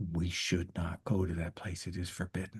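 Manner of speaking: muttered under breath. Game narrator voicing a character answering a player's question, under his breath. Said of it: "He says this under his breath".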